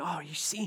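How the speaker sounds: soft, hushed gossiping whisper. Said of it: "Everyone's whispering".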